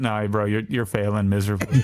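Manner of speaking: ordinary talk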